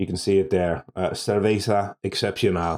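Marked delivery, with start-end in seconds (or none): 1.1-2.8 bad, terrible, put-on Spanish accent. Reading out the name on a beer label: terrible Spanish accent. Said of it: "that's my my terrible attempt at a Spanish accent there".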